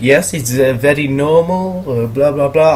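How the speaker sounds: bad, poorly done, put-on Dutch accent. Retelling a woman's answer to the first question asked: bad Dutch accent. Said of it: "I can't do a Dutch accent very well".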